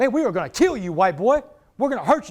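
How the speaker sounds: tough, menacing, barked trash talk. Retelling a basketball game, the speaker imitates the players barking threats at him. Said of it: "They're barking at me".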